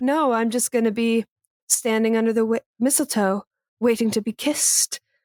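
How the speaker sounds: seductive, suggestive, sensual, sultry delivery. Retelling a film character's flirty reply to her boss: imitating a sensual delivery. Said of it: "she says it very, like, sensually".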